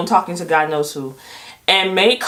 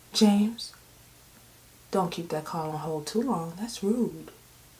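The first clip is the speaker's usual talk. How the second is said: poised, unruffled, soft and calm voice; 12 dB quieter than usual. Retelling what May said while walking out of the room, imitating May's calm first-lady voice. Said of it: "in the most calm first lady voice".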